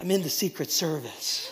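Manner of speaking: hushed confiding whisper. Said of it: "he whispered to his pastor".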